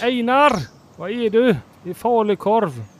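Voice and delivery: put-on Gothenburg accent. Joking about parents from Gothenburg, the speaker acts out a line in a Gothenburg accent. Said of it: "Det låter han också som göteborgare".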